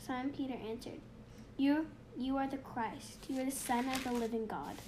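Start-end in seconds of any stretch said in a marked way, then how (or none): none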